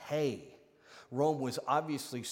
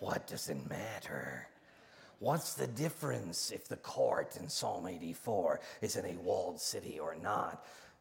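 put-on character voice, dropped deep and low; 5 semitones lower, 3 dB quieter than usual. Voicing the reader's imagined question, in a Shelob voice. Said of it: "In your Shelob voice".

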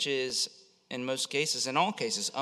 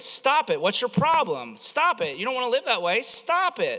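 shrill, loud, very high yelling, over and over; 10 semitones higher, 7 dB louder than usual. Describing a comedy skit where a man keeps yelling at a woman; imitating someone yelling. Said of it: "him just yelling at this woman over and over again".

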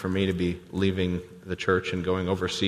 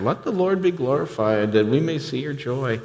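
put-on, derisive, sarcastic, mocking, raised pitch; 6 semitones higher, 4 dB louder than usual. Speaker reading Scripture, quoting hateful brothers, mockingly quoting. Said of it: "this is a mocking tone here".

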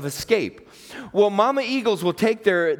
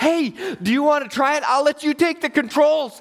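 put-on high, raised hollering yell; 8 semitones higher than usual. Retelling what the pilot shouted during the flight: imitating someone yelling. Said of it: "he yells".

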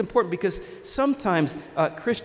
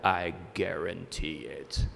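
very low, creaky, soft commercial announcer voice; 13 semitones lower, 6 dB quieter than usual. Speaker recalling old TV commercials to listeners, in Men's Wearhouse ad deep voice. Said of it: "that guy with the deep voice".

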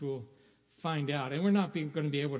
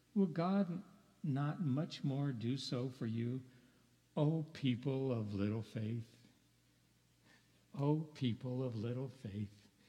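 soft, tender, loving, affectionate tone; 5 dB quieter than usual. Speaker quotes a scripture verse to the listeners, retelling tenderly. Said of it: "the tender, affectionate tone of voice when he says".

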